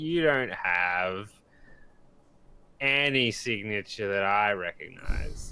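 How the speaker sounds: put-on drunk old geezer voice, drawn-out "have". Acting out an old geezer in a story: drunk old geezer voice. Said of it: "He sounds drunk".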